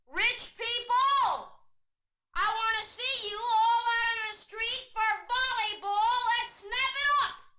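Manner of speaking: shrill, very high, loud hollered call. Retelling how he hollers at the empty street early one sunday morning. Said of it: "And he hollers".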